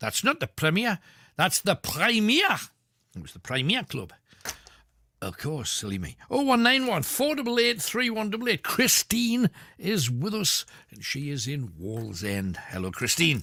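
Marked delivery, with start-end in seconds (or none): 0.0-2.6 put-on Ashington accent, much higher. Quoting a man's reply about a nightclub sign, in an Ashington accent. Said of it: "forgive me accent, Ashington".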